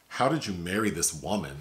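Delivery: ordinary delivery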